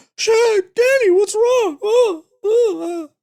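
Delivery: very high-pitched, very slow, stretched-out voice. Complaining about her voice in the film, the speaker does a Shelley Duvall impression. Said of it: "That's how she talks".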